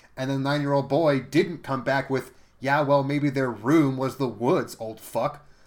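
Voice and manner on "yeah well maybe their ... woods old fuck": normal talking voice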